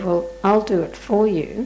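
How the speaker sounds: usual speaking voice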